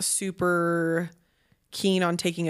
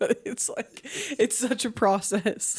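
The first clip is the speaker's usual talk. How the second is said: words broken up by laughs throughout; 4 semitones higher than usual. Reacting to a co-host's story about nightly struggles, laughing while talking. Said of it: "Sorry, I'm laughing".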